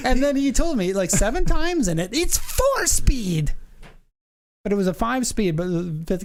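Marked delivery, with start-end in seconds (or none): 2.1-3.5 put-on Ukrainian accent with very high voice. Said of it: "I wish I could do his accent a little bit better".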